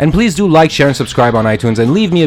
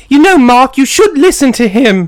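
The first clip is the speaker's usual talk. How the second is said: horrible put-on, very high British girl's voice; 11 semitones higher, 4 dB louder than usual. Acting out a movie scene, the speaker plays the girl's part in a horrible girl British voice. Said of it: "I do a horrible girl British voice".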